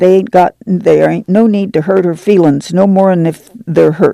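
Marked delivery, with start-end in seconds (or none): none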